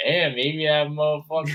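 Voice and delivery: tough brawler voice, musing aloud to oneself. Retelling what Mike Perry said after being fired, in a Mike Perry impression. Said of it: "my best like Mike Mike Perry impression".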